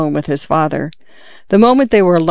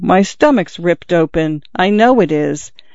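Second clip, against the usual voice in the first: ordinary delivery, nothing marked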